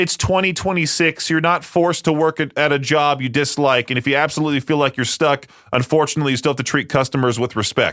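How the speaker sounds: plain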